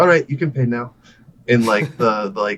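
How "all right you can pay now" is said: play-acted cheery, upbeat, bright English accent. Retelling an old man in a car asking for payment: imitating chipper english. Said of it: "most chipper English that I've heard".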